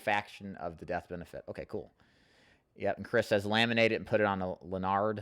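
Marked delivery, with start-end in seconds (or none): none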